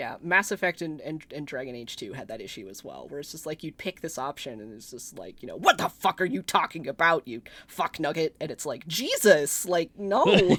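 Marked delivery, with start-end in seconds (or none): 5.6-8.3 mock-aggressive, acted, needlessly hostile outburst. Speaker mocks a player dialogue line from Mass Effect and Dragon Age, mock-aggressive outburst. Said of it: "not only needlessly aggressive".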